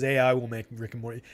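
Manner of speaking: normal talking voice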